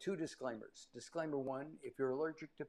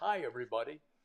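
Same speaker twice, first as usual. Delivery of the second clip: put-on old radio voice, louder; 2 semitones lower, 5 dB louder than usual. Recalling how he talked when he was just starting in radio: his old radio voice. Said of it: "I used to talk like this".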